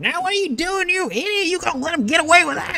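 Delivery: high-pitched character voice. A narrator voices a figure arriving after heavy footsteps, in a high-pitched voice. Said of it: "you hear that high pitched voice just coming in".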